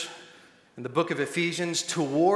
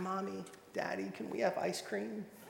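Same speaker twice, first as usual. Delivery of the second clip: put-on hushed, very soft, sweet little-girl voice; 4 semitones higher, 12 dB quieter than usual. Acting out a five-year-old sent up to the parents' room, sweetest voice. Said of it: "she'll say in her sweetest voice".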